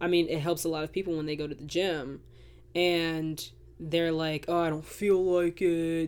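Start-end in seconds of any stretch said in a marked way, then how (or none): 4.5-6.1 slow, drawled put-on male voice. Mimicking people who go to the gym; male voice. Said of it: "Why did I just do a male's voice?".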